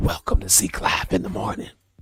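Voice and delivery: hushed whisper. Joking about doing the whole show in the dark: whispering. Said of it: "And we just whispering".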